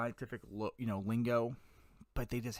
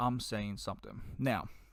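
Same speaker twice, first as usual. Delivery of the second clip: ordinary talk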